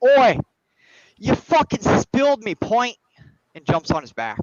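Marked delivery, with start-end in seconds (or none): 0.0-3.0 brawling dwarf shout, loud and high. Narrating a fight, the storyteller voices the dwarf getting up: yelling dwarf voice. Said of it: "The dwarf gets up and yells".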